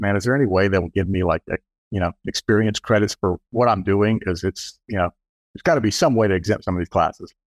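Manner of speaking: plain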